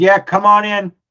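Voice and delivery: put-on thick, laid-on Brooklyn accent. A game master voices someone behind an office door answering a knock, heavy brooklyn accent. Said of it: "a heavy, like Brooklyn accent goes".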